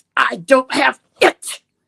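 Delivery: mock forceful, loud, slow, vehement dead-set tone. Speaker recounts mom leaving a neurologist appointment, retelling her vehement denial. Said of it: "the vehemence in her voice".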